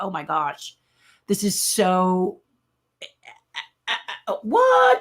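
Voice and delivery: slow, overwhelmed, choked-up voice with swooping pitch. Retelling an award winner's reaction: imitating choked-up speech. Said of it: "he got all choked up".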